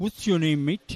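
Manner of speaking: put-on Yorkshire accent. Retelling a commentary-box meeting, quoting the visitor: Geoffrey Boycott Yorkshire accent. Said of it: "in his nice Yorkshire accent".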